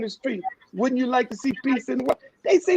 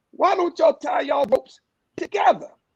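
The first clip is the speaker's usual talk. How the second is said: play-acted light hollering, as if from below; 4 semitones higher than usual. Telling a story, the speaker voices the young boy, retelling a boy's holler. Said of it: "The young boy hollered up the well".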